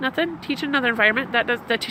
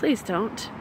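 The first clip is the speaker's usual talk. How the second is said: warm, tender voice full of love; 2 semitones lower, 6 dB quieter than usual. Demonstrating what to say to a dear one, loving. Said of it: "Do you feel the love in the voice?".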